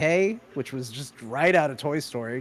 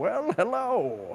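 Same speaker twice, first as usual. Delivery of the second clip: put-on old man voice with pitch raised; 6 semitones higher than usual. Explaining how a stream greeting began, Deckard Cain old man voice. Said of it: "I'd come on to ev- any show like an old man".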